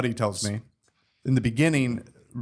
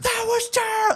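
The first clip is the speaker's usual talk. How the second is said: put-on screaming at the top of the lungs, higher. Retelling a director reacting to an improvised line: imitating Errol Morris screaming. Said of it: "just screaming, uh, like, at the top of his lungs".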